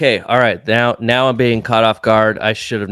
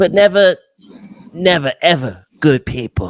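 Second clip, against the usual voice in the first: higher put-on small New York guy voice; 6 semitones higher than usual. Doing a movie-quote impression for others to guess: Tom Hardy as Eddie Brock impression. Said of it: "This is Tom Hardy as Eddie Brock in Venom".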